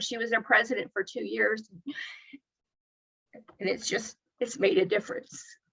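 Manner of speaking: soft, breathy, emotion-choked voice. A speaker tells about a woman's work, getting emotional. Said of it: "I get emotional about this".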